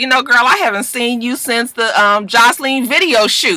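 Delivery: plain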